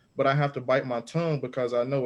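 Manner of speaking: normal talking voice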